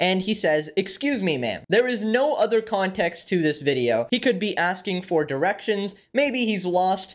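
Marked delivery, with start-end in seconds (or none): none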